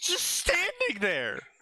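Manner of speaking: high, slow, amazed disbelief.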